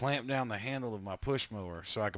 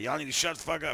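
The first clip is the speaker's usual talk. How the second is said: play-acted, high-pitched shouting; 5 semitones higher than usual. Retelling how a drunk old man yelled at them: imitating someone yelling. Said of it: "he starts yelling at us about".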